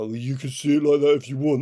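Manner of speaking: loud, strong put-on Austrian accent. Speaker retells another person's response: imitating Ulrich Siedel's Austrian accent. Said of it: "That's a hell of an Austrian accent you're".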